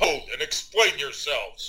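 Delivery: loud, authoritative, commanding voice. After casting ghost sound, the player calls out in character: loud, commanding voice. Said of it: "in a loud, commanding voice".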